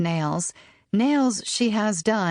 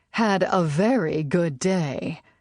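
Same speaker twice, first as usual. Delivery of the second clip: very slow, roughened whiskey voice. Reading a character who tells the narrator about her day: whiskey voice. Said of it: "she says in her whiskey voice".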